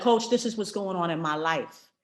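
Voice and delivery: normal talking voice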